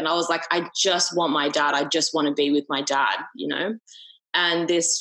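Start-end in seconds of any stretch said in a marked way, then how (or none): 0.5-3.2 panicked wailing with heaving crying. Retelling a night of grief after a father died: retelling panicked wailing.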